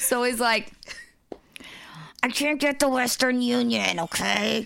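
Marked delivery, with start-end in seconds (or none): 2.2-4.7 clenched-jaw talking voice, higher. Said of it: "Stop going into that voice".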